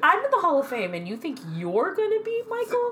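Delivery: very high, incredulous, mocking voice. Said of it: "He's like".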